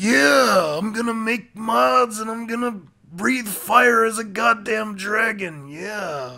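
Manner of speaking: yeah stretched out long in wrestler style. Doing a requested wrestler impression: Macho Man impression. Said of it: "do a Macho Man".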